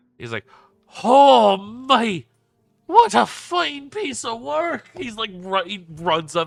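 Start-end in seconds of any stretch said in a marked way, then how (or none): 1.1-4.9 very loud, high, booming, very drawn-out gleeful voice. Voicing a character thrilled by a rune-covered automaton: excited like a child at Christmas. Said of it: "eyes light up like a child at Christmas".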